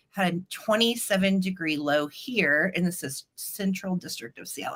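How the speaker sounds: plain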